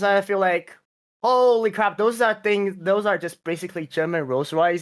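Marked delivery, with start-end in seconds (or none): none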